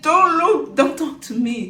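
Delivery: high, loud, rebuffing, dismissive outburst.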